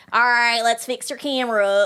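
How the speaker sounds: slow, fake, put-on Texan country drawl. Retelling what a man at a camera store said, in a put-on Texan country accent. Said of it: "I'm gonna do a Texan accent or like a country".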